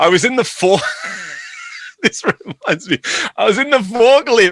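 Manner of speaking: words broken by laughter, high and swooping pitch. Telling a story to a livestream audience, laughing while talking. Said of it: "I'm sorry, I'm laughing".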